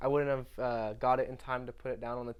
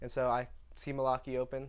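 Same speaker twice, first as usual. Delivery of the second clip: ordinary talk, nothing marked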